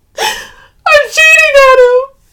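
very high, very loud, very drawn-out bursting outburst. [name] answers Sylvie, who is gripping her shoulders, bursting out. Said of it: "She bursts out".

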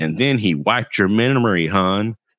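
weak, uncommitted, lazy tossed-off cartoon voice. Recounting a scene where Miss Minutes speaks, Miss Minutes voice. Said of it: "That was a terrible impression".

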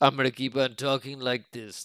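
gruff character voice, dug in. Describing the character Clancy Brown speaks for: Clancy Brown impression. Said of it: "I gotta find the voice again".

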